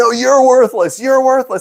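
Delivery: put-on furious shout, very high and shrill. Retelling an argument with a repairman: imitating someone yelling. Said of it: "he's yelling to the point where".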